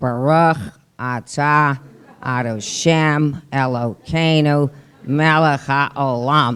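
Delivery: put-on flat Midwest American accent. Showing how Golda Meir actually spoke: Golda Meir's flat Midwestern affect. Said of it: "that's how she spoke".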